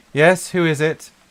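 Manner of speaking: very posh, high-pitched upper-class woman's voice. Someone knocks on a door and a woman answers, very posh female voice. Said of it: "you hear a very posh voice, female".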